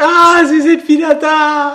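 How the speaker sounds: very high, very loud startled shriek. Rehearsing a scene, showing how the line should sound: startled. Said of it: "so ganz erschreckt".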